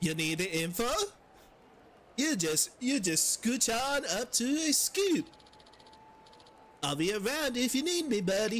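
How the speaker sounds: bad put-on Swedish accent drifting vaguely European. Voicing a character offering info, bad swedish accent. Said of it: "I try to do Swedish and I just turn into vaguely European".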